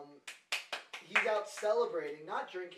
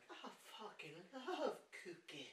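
very soft ogre voice; 2 semitones higher, 13 dB quieter than usual. Describing a video to the other speaker, quoting it in a Shrek voice. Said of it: "it's like Shrek, but he's like".

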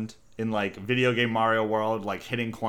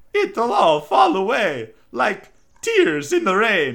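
very high, loud cartoon voice with big pitch swoops; 12 semitones higher, 8 dB louder than usual. Auditioning for Mario with a serious line: Mario voice. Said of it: "we're auditioning for Mario".

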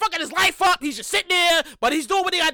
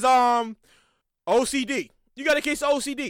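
bone-dry, low, very slow, drawn-out deadpan; 4 semitones lower than usual. Retelling what his supervisor said at work, imitating Jay's deadpan delivery. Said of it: "and this is deadpan, straight face".

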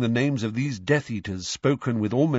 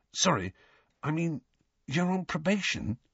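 high, hushed half-whisper, dropped right down low; 6 semitones higher, 6 dB quieter than usual. Narrator reads a character hushing a question he just blurted out; half-whispering. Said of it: "he whispered".

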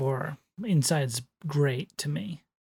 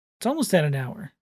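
usual speaking voice

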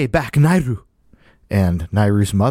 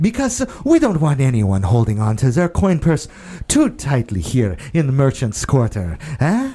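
raised, pitched-up, projected loud voice; 5 semitones higher than usual. A character straightens up to address passersby in the merchant's quarter: raised voice. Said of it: "raises his voice as if to address the other passersby".

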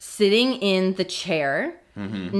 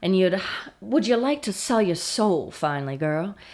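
put-on southern gentleman voice. Quoting what he said to the speaker, in a southern gentleman voice. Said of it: "a southern gentleman".

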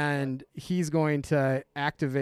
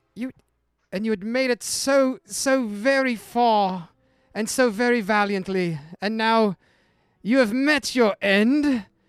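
sweet voice, much higher; 8 semitones higher, 7 dB louder than usual. Game narrator voicing Lovey to the next character to go, a formerly sweet voice. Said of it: "formerly sweet voice in the back say".

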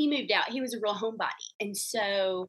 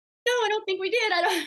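very high mock sobbing, tearful crying voice; 12 semitones higher, 4 dB louder than usual. Retelling your answer to him in the kitchen after moving him out, reenacting busting out crying. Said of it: "just busting out crying".

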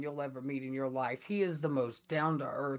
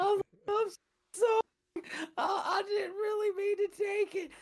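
put-on sobbing voice, higher pitch; 4 dB louder than usual. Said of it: "I'm sitting there crying".

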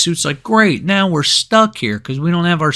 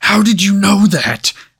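furious, angry outburst, high-pitched; 5 semitones higher, 4 dB louder than usual. Retelling a movie villain's reaction to Rocket: imitating an angry villain. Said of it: "he immediately got so angry".

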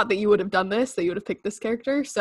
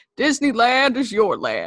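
animated voice, pitch swooping up and down; 4 dB louder than usual. Trying a first Walt Disney impression, as another speaker requested: Walt Disney impression. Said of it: "I've never done a Walt impersonation".

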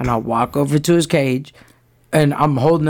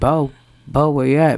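sweet, nice, pleasant voice. Retelling calling downstairs for the dog Bo: put-on sweet voice. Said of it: "Using my sweet voice".

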